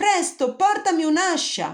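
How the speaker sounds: very high-pitched, loud shout. Landing with the giant coming down after him, calling to his mother, yelled. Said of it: "urlò Jack toccando terra".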